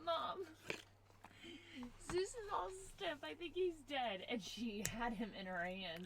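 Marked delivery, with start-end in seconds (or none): 0.0-4.2 high, tearful, distraught mock crying through the words. Retelling waking up to a crying daughter, imitating a daughter crying. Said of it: "I wake up to her crying, being like".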